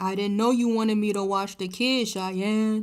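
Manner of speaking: booming, loud, put-upon dad voice. Retelling a creator's sketch: imitating a deadbeat baby daddy character. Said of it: "he pretends to be, like, the deadbeat baby daddy".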